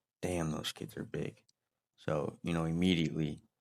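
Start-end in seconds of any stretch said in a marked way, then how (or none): 0.2-1.4 quiet mutter under the breath, quieter. Retelling what the coach said pulling up to the field: imitating muttering under his breath. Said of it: "under his breath".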